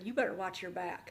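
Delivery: acted-out venomous put-on delivery. Retelling what a woman said at the door before leaving, retelling a venomous threat. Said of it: "she came at me with venom".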